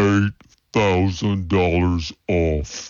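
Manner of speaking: exaggerated slow-motion, drawn-out, very slow delivery. A car ad announcer repeating the offer in a replay; slow-motion delivery. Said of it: "Let's hear it again in slow motion".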